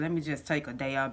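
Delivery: ordinary delivery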